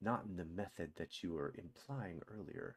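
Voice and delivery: very quiet, low, secretive hushed undertone. A character checks that no one's around, then replies, lowered voice. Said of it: "lowers his voice again".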